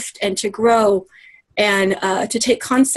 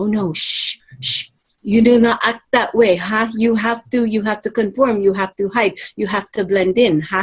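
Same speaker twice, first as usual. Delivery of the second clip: put-on Filipino-accented English. Addressing a millennial listener, voicing a scolding upbringing in a Filipino accent. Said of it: "Excuse me for using my Filipino accent".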